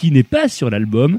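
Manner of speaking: ordinary delivery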